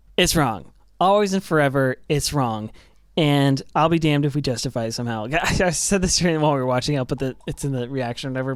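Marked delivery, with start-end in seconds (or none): none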